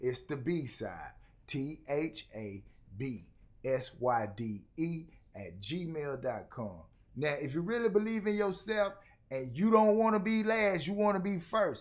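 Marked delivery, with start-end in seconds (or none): 0.0-6.8 very slow, much lower, quieter. Host repeating the email address so listeners can hear it again, very slow. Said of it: "I'm going to say it even slower this time".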